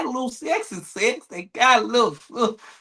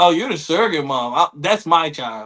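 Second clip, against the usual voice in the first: mock deadpan delivery, lower pitch; 6 semitones lower than usual. Mocking someone who claims a baby with a straight face: imitating a straight-faced claim. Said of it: "sit right there with a straight face".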